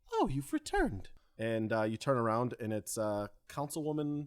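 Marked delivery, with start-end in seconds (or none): 0.1-1.0 soft, gentle, very high voice. Voicing a councilwoman who speaks from behind the returning group: soft voice. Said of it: "a soft voice behind you".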